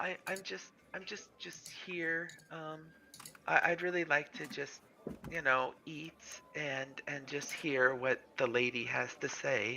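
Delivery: shy, very quiet, halting voice. Voicing a flustered woman who has just giggled under her breath, quiet, reserved, demure. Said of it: "quiet, reserved, a little almost maybe demure".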